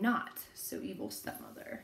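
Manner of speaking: sassy, with a little attitude and swooping pitch.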